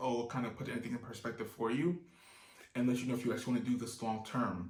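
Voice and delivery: ordinary talk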